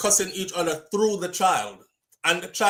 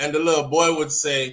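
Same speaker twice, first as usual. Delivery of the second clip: normal talking voice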